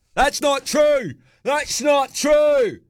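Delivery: shrill, swooping, very high, rising repeated heckling yell. Impersonating a man who didn't like the answer he got at a Q&A, imitating his yelling. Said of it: "that's good impersonation".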